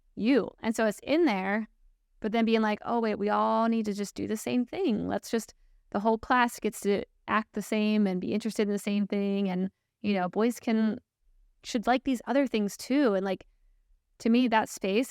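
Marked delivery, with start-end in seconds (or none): none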